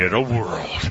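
low, deep dramatic trailer announcer voice. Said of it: "in his deep, dramatic voice known for saying".

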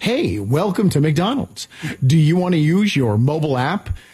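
canned, pre-recorded automated voice. Describing a drive-through visit, imitating the automated drive-through greeting voice. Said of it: "you hear this voice that's like".

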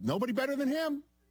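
high put-on voice, pushed way up. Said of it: "still gotta go high register".

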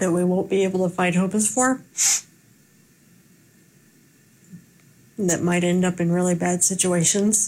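moved, emotion audibly rising in the voice mid-sentence. Reporting a story and carrying on after admitting it's emotional, getting emotional. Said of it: "now I'm getting emotional".

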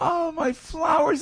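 put-on high, slow, whiny wailing baby voice.

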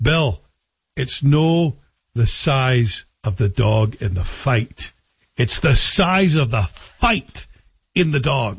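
put-on slow Scottish accent.

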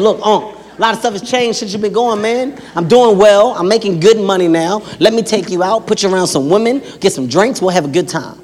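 ordinary delivery

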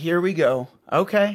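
very slow, very drawn-out sarcastic drawl. Showing how a sarcastic reply to a desperate teen sounds: acting out a sarcastic reply. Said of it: "Some of it is sarcasm even".

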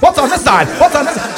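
put-on high, excited kid chatter.

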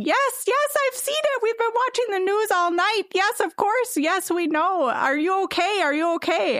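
mock shrieking at a very high pitch. Retelling how Mom answered the call about the tornado, imitating her screaming. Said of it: "she just starts screaming".

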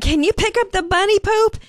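put-on calling-out yell. Speaker retells calling out to someone who was outside: retelling a yell. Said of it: "I'm yelling out to Jay".

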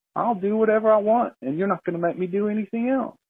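high, nonchalant, unbothered bear voice.

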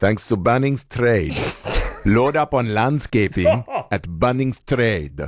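accent from Ecuador. Reading the sponsor thanks to Bunnings Trade, put-on Ecuadorian accent. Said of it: "That accent again".

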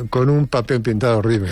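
plain

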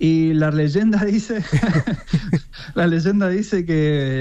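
slow, amused delivery, laughing while speaking.

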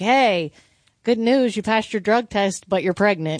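normal talking voice

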